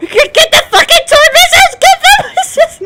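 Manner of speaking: very high, shrill, loud screaming. Telling a war story, a speaker acts out a man screaming at his gunner: retelling a scream. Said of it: "he's screaming at the gunner going".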